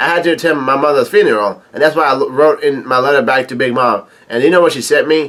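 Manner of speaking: usual speaking voice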